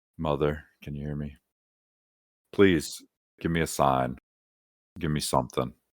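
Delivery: barely audible, very quiet, soft half-whisper. Made to do it in front of the others, calling to mother: half-whispering as quietly as possible. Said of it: "whisper as quietly as I can".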